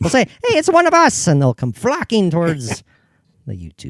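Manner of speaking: very high, slow, drawn-out leprechaun voice. Talking with a co-host about their youtube audience, in a leprechaun voice. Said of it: "I've got like the leprechaun voice going".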